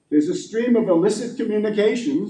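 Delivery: ordinary talk, nothing marked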